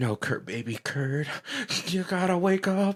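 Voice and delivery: high-pitched, exaggerated pleading voice.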